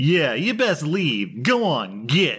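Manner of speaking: acted-out jeering, high cackling taunt. Retelling a man throwing a beer and taunting, imitating a cackling taunt.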